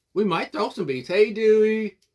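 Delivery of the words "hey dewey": really strong country accent. Calling out a greeting while cutting pieces, sounding really country. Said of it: "I sounded really country just then".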